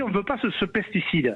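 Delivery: ordinary delivery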